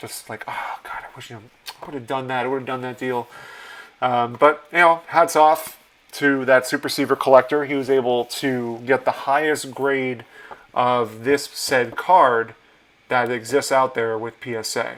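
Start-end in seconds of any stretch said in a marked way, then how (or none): 0.5-3.3 put-on muttering under breath, quieter. Retelling leaving the show after missing a card deal: imitating muttering under breath. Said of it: "muttering under my breath".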